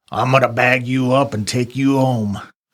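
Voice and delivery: guttural, throaty creature voice from the gut. A restrained captive, asked a question, answers his questioner in a guttural voice. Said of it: "he will respond in a guttural voice".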